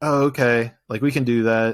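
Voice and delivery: put-on curt, disengaged, uninterested tone. Retelling how a chiropractor answered a phone call: imitating a curt, disengaged reply. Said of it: "very short, not very present".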